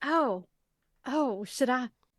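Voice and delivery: slow, unhurried Southern drawl. Asking the group whether to try it out: very Southern-sounding. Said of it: "That sounded very Southern".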